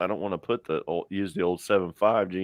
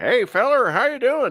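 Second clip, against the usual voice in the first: put-on very high, loud old hillbilly voice; 7 dB louder than usual. Retelling how an old man answers their phone calls, imitating an old hillbilly. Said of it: "He's he's an old hill jack".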